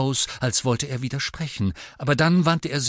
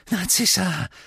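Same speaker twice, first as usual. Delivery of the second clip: small, high, squeaky voice; 6 semitones higher than usual. A man greets two women who have come to see him: squeaky voice. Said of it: "sagte er mit quiekender Stimme".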